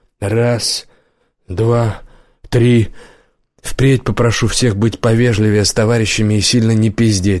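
ordinary delivery

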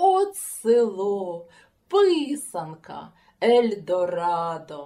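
very loud, very slow, rapturous, delighted exclamation. A visitor arriving at a village exclaims with delight. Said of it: "захоплено сплеснув руками і вигукнув".

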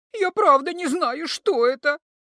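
pitiful, plaintive, squeaking voice. A captive kikimora answers the healer's questioning, in a plaintive squeak. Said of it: "жалобно пропищала несчастная узница".

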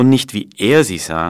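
"ER" stressed, hard and loud.

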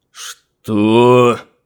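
angry outburst, boiling over with anger. A sorcerer turns toward the man who just spoke, boiling over with anger. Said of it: "Вскипел чародей".

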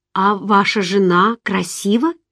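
timid, shy, hesitant delivery. The narrator, talking with a married man, asks him something timidly. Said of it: "робко спросила я".

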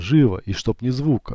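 ordinary delivery

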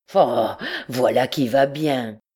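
strangled, rage-stifled, choked voice. Narrating, a captain answers an insult from a shadowy figure: voice choked with rage. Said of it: "d'une voix étouffée de rage".

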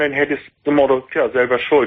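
ordinary talk

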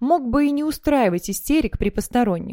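ordinary talk

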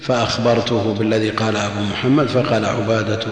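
ordinary talk, nothing marked

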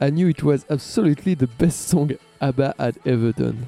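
put-on French-accented English.

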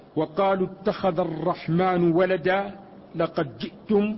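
ordinary talk, nothing marked

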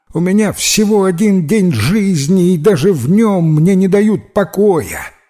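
high, rooster-like exclamation. Narrator voices a rooster that an angel has just tumbled onto, exclaiming like a rooster. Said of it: "воскликнул петух по-петушиному".

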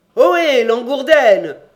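very loud, high-pitched shouting call. Someone calls down from the top of the stairs; shouting from upstairs. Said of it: "cria-t-on du haut de l'escalier".

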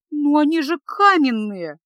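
terrified, faltering, slow, frightened stammer. The mage's terrified apprentice protests to him, terrified babbling. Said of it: "пролепетала перепуганная до смерти ученица".

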